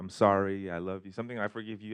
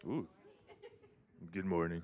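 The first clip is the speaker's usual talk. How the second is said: put-on radio announcer voice, on-air delivery; 7 dB quieter than usual. Trying out a new mic, the speaker greets everyone in a radio voice. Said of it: "It's my radio voice".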